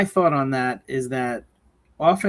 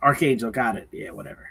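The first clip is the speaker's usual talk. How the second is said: put-on dismissive voice; 2 semitones lower than usual. Retelling how the character brushes off his dad: imitating a dismissive son. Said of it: "Very dis-, dismissive".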